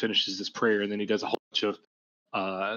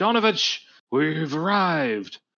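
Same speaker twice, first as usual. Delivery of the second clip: loud, high hollering call; 7 semitones higher, 5 dB louder than usual. Game master voicing Ismark as the party comes in: Ismark hollering. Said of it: "Ismark hollers".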